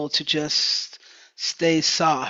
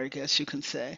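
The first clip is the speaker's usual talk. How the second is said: normal talking voice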